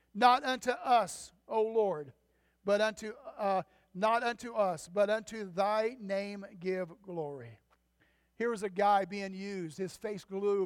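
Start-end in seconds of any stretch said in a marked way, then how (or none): none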